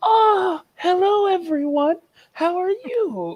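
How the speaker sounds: super sweet queen voice, very high and slow. Describing a game's castle scene, imitating a super nice elephant queen. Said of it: "this super nice elephant queen who's like".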